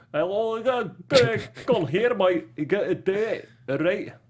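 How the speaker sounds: fake, terrible Scottish accent, high and slow. Trying out an impression of a movie line in a bad pseudo-Scottish accent. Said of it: "my pseudo-Scottish accent".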